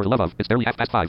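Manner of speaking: plain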